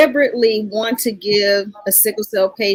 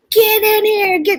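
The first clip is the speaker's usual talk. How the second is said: put-on screaming, pitched higher; 12 semitones higher than usual. Retelling how mom went into the hallway: retelling mom screaming. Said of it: "started screaming".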